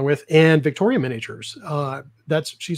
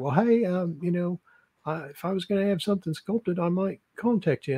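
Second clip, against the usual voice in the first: bad put-on Australian accent, higher pitch; 4 semitones higher, 7 dB quieter than usual. Recounting what she said when they met at ReaperCon, terrible Australian accent. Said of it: "a terrible Australian accent".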